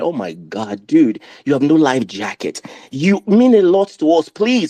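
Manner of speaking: crying, panicked begging with swooping pitch. Recalling talking to the TV about a man in a boat, retelling crying. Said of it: "and I'm crying".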